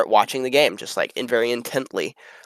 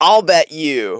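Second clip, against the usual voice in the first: relaxed but commanding and authoritative, raised voice; 5 semitones higher, 5 dB louder than usual. Recounting Oberon pointing at the match and offering a bet, Oberon voice, mock-relaxed but authoritative. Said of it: "a way more relaxed tone than Oberon normally speaks".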